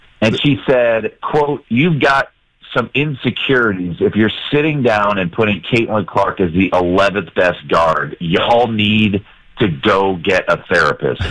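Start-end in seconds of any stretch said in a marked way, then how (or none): none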